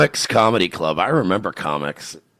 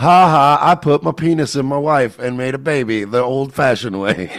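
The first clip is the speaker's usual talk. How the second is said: slow, deliberate drawl, every word drawn out; 4 semitones higher, 4 dB louder than usual. Joking about what Dave Smith would say: imitating Dave Smith. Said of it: "Dave Smith's like".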